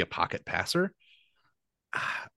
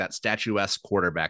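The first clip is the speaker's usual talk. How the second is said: usual speaking voice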